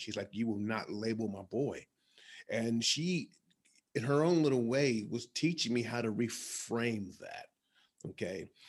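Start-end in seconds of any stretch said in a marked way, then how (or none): 0.3-1.9 put-on angry voice. Retelling how the mother answered the testers: imitating an angry mother. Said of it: "She got very angry".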